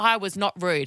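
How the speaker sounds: normal talking voice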